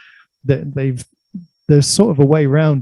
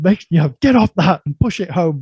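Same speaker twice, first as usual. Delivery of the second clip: put-on police officer voice, screaming and scolding; 4 semitones higher than usual. Retelling how a police officer in a park yelled at a boy: imitating a police officer screaming. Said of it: "he screamed at him".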